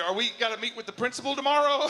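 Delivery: plain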